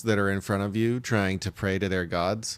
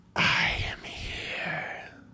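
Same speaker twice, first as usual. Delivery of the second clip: sunken, hoarse, raspy, loud whisper; 8 semitones higher, 5 dB quieter than usual. Voicing a death god answering a call: raspy loud whisper. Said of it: "it's very raspy, ... like a whisper, but a loud one".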